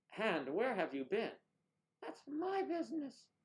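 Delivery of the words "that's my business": squeaky, very high ventriloquist puppet voice. Doing ventriloquism with a hand, answering for it in a ventriloquist hand-puppet voice. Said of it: "for ventriloquism".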